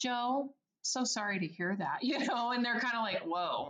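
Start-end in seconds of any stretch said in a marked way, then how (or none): 0.0-2.0 very calm, toned-down, lowered voice. Showing how you answer people who are yelling at you: calm, lowered voice. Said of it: "I will lower my tone of voice and talk very calmly".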